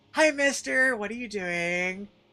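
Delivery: put-on high, slow voice of a small child. Acting out a little kid in hell greeting a demon: little kid voice. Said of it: "imagine little kid running around in a hell doing things like walking up to a demon".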